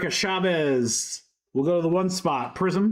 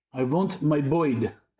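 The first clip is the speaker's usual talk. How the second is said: put-on movie villain voice, growled low; 2 semitones lower than usual. Opening a card pack and quoting a villain: Ivan Vanko impression. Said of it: "My wife hates that impression".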